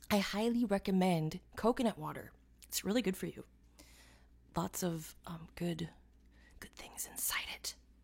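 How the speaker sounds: soft, hushed, conversational whisper. Sipping a fresh coconut while waiting for people, the speaker talks, whispering. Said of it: "I don't know why I'm whispering".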